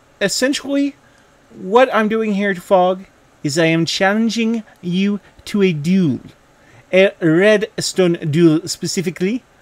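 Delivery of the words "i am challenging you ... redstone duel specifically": bad, horrible put-on French accent. Speaker challenges fog to a redstone duel in a horrible french accent. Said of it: "that was a horrible French accent".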